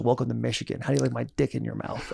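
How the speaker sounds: very hushed, super raspy, glass-swallowed rasp. Retelling the first day, a man walking up to him: Mike Barwas super raspy voice. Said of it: "he's got this like super raspy".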